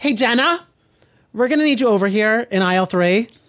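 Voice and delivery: commanding, stern principal-style voice. Retelling how Bryn called Jenna over: imitating Bryn in principal mode. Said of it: "principal mode, flight attendant, like, kind of like, like, housewife Karen".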